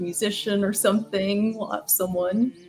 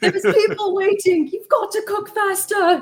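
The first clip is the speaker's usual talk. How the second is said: very high, loud, squeaky mouse voice; 12 semitones higher, 6 dB louder than usual. Imagining a mouse as a TV chef scolding a cook: Gordon Ramsay voice. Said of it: "imagining the little Gordon Ramsay mouse".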